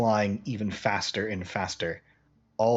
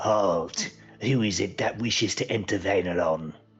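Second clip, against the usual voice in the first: demonic creature voice. Game master voices a demon halting the arriving party, demon voice. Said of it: "this demon goes".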